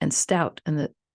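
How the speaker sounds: ordinary delivery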